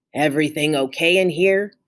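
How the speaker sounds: low, deep, gruff voice. Narrator reading a dark figure in the doorway asking a question, deep gruff voice. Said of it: "asked a deep, gruff voice".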